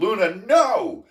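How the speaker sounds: loud yelling at a very high pitch. Retelling yelling at their dog that caught a duck, retelling a yell at a dog. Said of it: "I'm yelling at her".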